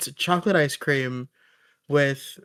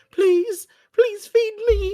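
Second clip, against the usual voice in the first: very high, squeaky little-creature voice, pleading; 4 dB louder than usual. Acting out the tiny creature in the soul: tiny little creature begging. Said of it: "this little creature is just like".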